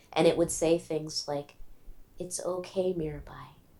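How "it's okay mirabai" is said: very gentle, soft, quiet, reassuring voice. Recalling an inner voice that countered the bargaining voice: gentle, quiet voice. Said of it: "that voice was very gentle and very quiet".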